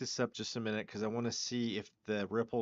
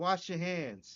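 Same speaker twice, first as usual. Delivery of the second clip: put-on New York accent, pitched up; 7 semitones higher than usual. Imitating how he sounds, in a New York accent. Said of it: "he even sounds like he has like a New York accent".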